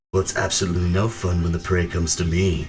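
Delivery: voice neither male nor female. Voicing a figure speaking into the party's minds: androgynous voice. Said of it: "you hear that same androgynous voice".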